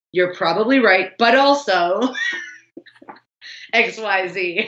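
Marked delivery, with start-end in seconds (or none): none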